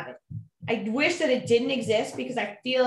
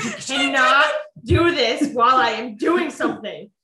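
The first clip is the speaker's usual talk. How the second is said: loud, stern, threatening schoolteacher voice; 5 dB louder than usual. Retelling a message the speaker sent to her, in a put-on teacher voice. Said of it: "I threatened her with like my teacher voice".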